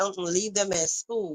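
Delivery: no-nonsense, strict, firm parent voice. Retelling a parent's rule about phone calls: imitating a strict mom. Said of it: "My mom would be like".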